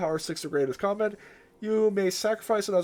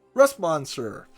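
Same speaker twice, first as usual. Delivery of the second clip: loud shouting; 3 semitones lower, 6 dB louder than usual. Mid card game, calling out a card's name, yelling. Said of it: "Sorry for yelling like that".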